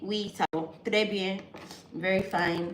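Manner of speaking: ordinary talk, nothing marked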